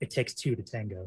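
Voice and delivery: whispered speech. Voicing a character who leans in and whispers into an enemy's ear: whispering. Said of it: "I lean in and I whisper into his ear".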